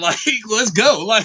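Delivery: speaking while laughing through the words.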